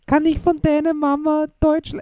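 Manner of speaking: mock slight foreign accent in German. Retelling a funny line in German: imitating Jamil's slight accent in German. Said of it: "just the way he said it with a slight accent".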